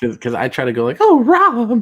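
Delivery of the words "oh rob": very high, loud, shrill, panicky freaking-out cry. Showing another speaker the voice, freaking out and panicking: Mary Tyler Moore voice freaking out. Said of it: "do the voice a little bit more like how she, um, sorta, like, freaks out and panics".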